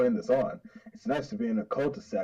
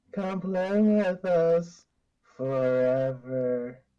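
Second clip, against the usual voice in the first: put-on eerie creepy child voice, higher; 6 semitones higher, 3 dB louder than usual. Voicing twin kids inviting Amanda to play: creepy twin voice. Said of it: "enough with the creepy twin shtick".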